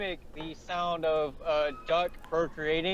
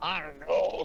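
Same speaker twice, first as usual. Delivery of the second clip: put-on old man voice. Speaker retelling a Red Dead 2 scene to another player: Jack Marston's old man voice. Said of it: "in his old man's voice".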